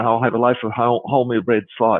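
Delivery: ordinary talk, nothing marked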